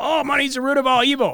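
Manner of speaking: mock heated yelling. Describing how most people fight, the speaker mimics them: imitating people yelling. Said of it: "And they just yell".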